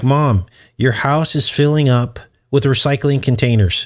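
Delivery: plain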